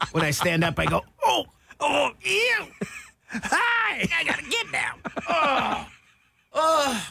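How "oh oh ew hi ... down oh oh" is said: very high, drawn-out oh's. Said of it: "that's my [name] impersonation".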